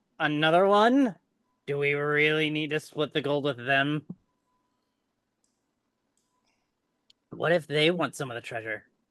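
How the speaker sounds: character voice in whisper. As Igor, speaking telepathically to another character, whispering. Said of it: "kind of whispers to you telepathically".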